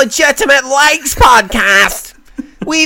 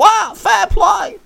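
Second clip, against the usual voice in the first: put-on shrill comedian voice, higher and quieter; 7 semitones higher, 4 dB quieter than usual. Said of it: "It all becomes way more shrill".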